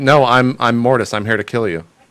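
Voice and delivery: normal talking voice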